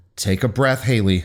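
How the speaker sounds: ordinary delivery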